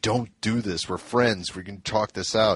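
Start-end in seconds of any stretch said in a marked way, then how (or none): none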